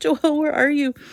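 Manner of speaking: high, loud scream breaking into tears. Retelling losing track of joelle, reenacting screaming while crying. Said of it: "I'm like screaming, I'm starting to cry".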